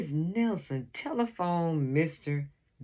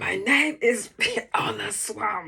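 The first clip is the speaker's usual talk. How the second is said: scratchy woman's voice, scratchy edge on every word; 4 semitones higher, 4 dB louder than usual. Reading the lady at the door introducing herself to the kids, scratchy voice. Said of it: "said the lady in a scratchy voice".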